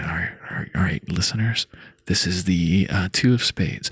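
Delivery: hushed, half-whispered stage whisper. Showing how the card will be announced to listeners: half-whispering into the mic. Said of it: "I'm gonna whisper into the mic".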